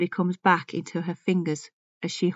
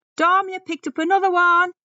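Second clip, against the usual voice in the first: shrill, very high, loud, far-carrying shout; 12 semitones higher, 6 dB louder than usual. Narrator reads one of the lads shouting to Dom as he enters; shouting. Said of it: "One of them shouts".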